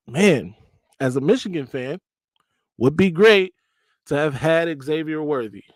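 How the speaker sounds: ordinary delivery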